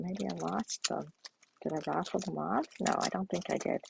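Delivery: soft muttering mumble to oneself. Searching for missing gems while showing a suite, the speaker is mumbling to oneself. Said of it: "I'm mumbling to myself again".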